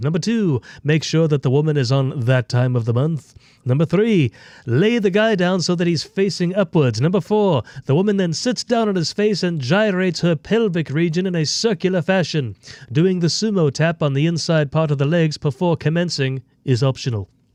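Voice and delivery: cartoon baby character voice. Speaker reads an Urban Dictionary entry aloud, Stewie voice. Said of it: "I'll read it in Stewie's voice".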